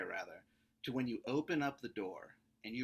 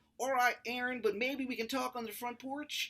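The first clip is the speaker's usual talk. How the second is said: terrible put-on Maryland accent, very high; 13 semitones higher than usual. Retelling a man's reply after being told to get out: worst Maryland accent. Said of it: "the worst Maryland accent".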